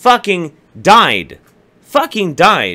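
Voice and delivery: worked-up, angry insistence. Ranting to listeners and admitting to getting heated. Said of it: "I'm getting heated about this shit".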